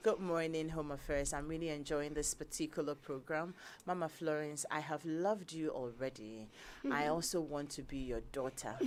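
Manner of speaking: usual speaking voice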